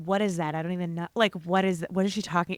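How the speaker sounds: put-on catty mutter under breath. Retelling a TV scene where Lauren mutters about a castmate: muttering under her breath. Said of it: "Lauren goes under her breath".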